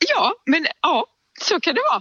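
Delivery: high voice, laughing and crying through the words.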